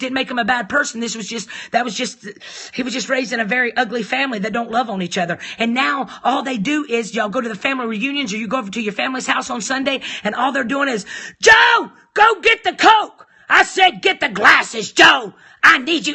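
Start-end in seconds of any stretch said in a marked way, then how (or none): 11.4-16.2 loud, drawn-out, bossy, domineering delivery. Retelling how the husband's mother talks to her husband: imitating a mother ordering her husband. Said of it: "she's talking to her husband like this".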